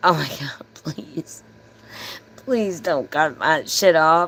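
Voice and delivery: mock crying, pleading tone. Speaker retells running outside after everything was cut off, retelling a crying plea. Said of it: "I run outside and I'm crying".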